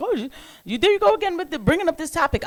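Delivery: high, mocking, whiny voice. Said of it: "People are gonna say, like".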